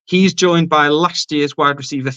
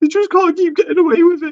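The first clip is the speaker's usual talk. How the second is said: mock, very high-pitched voice on the verge of tears; 14 semitones higher than usual. Retelling a reaction after the Super Bowl loss: imitating Ian almost crying. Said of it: "Ian c-, almost crying, going".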